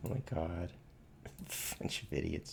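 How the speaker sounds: talking through laughter. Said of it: "I just can't help it".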